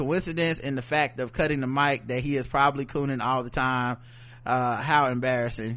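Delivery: ordinary talk, nothing marked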